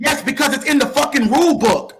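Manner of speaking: heated, fired-up, insistent, cursing. Arguing over what the rule book says with someone talking over him: yelling. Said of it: "I know you were yelling".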